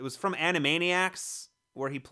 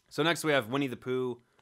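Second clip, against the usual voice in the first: ordinary delivery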